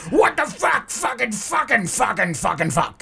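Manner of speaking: raging, high, screaming cursing fit. Retelling a road confrontation, imitating a friend screaming at a driver. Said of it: "She's literally just going".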